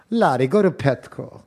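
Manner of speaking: put-on Greek-accented voice. Retelling a line the speaker said to larry, in a greek accent. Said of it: "I did a Greek accent".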